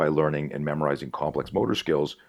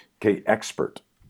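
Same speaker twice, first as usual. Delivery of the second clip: assertive, raised talking back; 5 semitones higher than usual. Speaker acts out what they say to the TV news, retelling a loud, assertive remark. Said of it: "in a loud, assertive voice to the TV".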